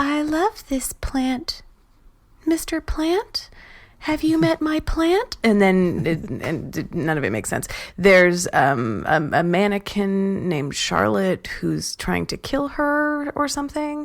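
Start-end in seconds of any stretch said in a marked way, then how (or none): 0.0-5.4 put-on very high, girlish nonsense-chatter voice. Describing a strange video, imitating the woman's very high voice. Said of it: "a very high voice".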